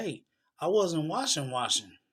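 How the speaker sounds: heated, mildly hollered half-yell. Retelling an argument that kept going back and forth, imitating own hollering. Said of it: "I'm hollering and screaming".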